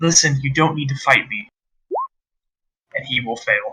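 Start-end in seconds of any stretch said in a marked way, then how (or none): 0.0-1.5 charming, coaxing, sweet-talking tone. Game master voices a character trying once more to charm an opponent, charming and coaxing. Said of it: "once more try to charm Big Wayne".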